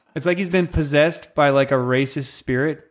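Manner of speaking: normal talking voice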